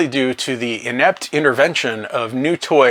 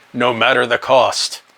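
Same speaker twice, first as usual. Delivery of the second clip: bad put-on robot voice, slower. Summarizing a movie scene, the speaker does a terrible Optimus Prime impression. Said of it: "That's a terrible impression of Optimus Prime".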